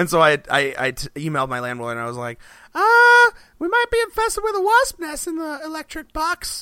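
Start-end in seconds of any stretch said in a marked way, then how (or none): 2.7-6.6 odd put-on voice, very high and loud. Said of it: "I don't know why I'm talking like this".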